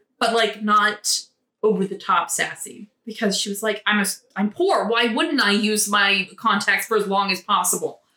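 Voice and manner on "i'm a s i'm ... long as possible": ordinary talk, nothing marked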